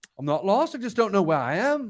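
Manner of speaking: put-on Scouse accent throughout. Retelling a man's funny remark from a coach trip, in his Liverpool accent. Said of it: "like his Liverpool accent".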